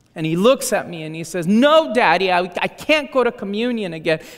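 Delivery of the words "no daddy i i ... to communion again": acted, upset, distraught little boy, stammering on "I". Retelling what a worried young son said: imitating a distraught child. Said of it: "He's very distraught".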